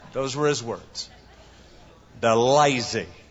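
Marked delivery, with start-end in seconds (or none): 2.1-3.0 slow, drawn-out Southern drawl. Retelling a radio interview answer: J. Vernon McGee southern drawl. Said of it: "He said in that southern drawl".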